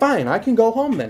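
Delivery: put-on furious yelling, pitched very high. Retelling own past words in a school argument, retelling own angry yell. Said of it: "I start yelling".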